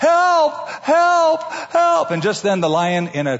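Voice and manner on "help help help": acted yell, much higher, louder, slower. Telling a story, acting out a panicked figure calling out: retelling a yell for help. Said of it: "he's just yells out".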